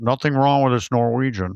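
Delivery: put-on unchanging monotone voice. Retelling a film scene line by line: Wilford Brimley voice. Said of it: "He just talks like that".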